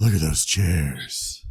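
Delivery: very low, sultry, slow, drawn-out purr. Retelling what a friend said about the chairs: Tim's sultry low voice. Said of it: "It got sultry and low".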